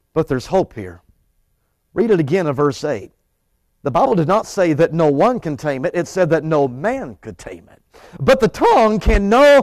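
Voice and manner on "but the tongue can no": voice unexpectedly cracking mid-phrase. Preaching on a Bible verse to a congregation, voice cracking. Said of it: "I don't know why my voice just cracked".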